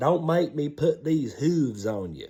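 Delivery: put-on country bumpkin accent. Retelling what a friend always used to say, imitating Curtis's country accent. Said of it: "He talked like this".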